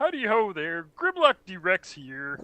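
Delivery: high, swooping, drawn-out frog puppet voice. Picturing a monster robot talking in the Kermit voice. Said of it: "a Grimlock with the Kermit voice".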